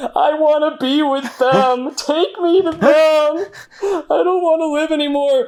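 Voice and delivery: play-acted, drawn-out, very high, slow tearful crying. Narrating a scene where the listener sits defeated in the rubble, weeping. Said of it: "you're like weeping".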